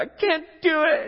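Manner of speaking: shrill, very high, booming, dragged-out exasperated frustration. Retelling someone who cannot carry an iPad and apples: imitating frustrated speech. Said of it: "he's just so frustrated".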